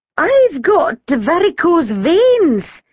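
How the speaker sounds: trembling voice, very high pitch, very slow pace. A dinner lady, eyed accusingly by a man, answers him: tremulous. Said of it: "Mrs. Hubble said tremulously".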